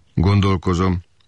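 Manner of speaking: chilly, cold, unmoved tone. A maid answers a killer's helpless question, replying coldly. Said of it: "felelte hidegen a komorna".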